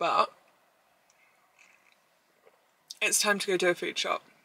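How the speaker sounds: talking with mouth full. Talking to the camera before a food shop, eating while talking. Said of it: "Excuse the fact I'm eating and drinking while talking".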